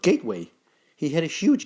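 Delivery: plain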